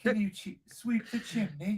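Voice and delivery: clumsy put-on British accent, pitched high, loud. Told by his partner to sound more British, the husband tries again, bad Mary Poppins-style British accent. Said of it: "More Mary Poppins, less Crocodile Dundee".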